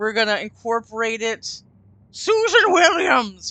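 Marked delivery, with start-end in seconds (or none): 2.1-3.5 put-on Welsh accent, very high and raised. Saying a name while playing a game, in a Welsh accent. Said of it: "he did that in a Welsh accent".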